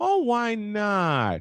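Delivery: mock sweet, innocent voice. Speaker retells a woman answering Victor's refusal, mimicking a pretty innocent voice. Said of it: "she puts on this pretty little innocent voice".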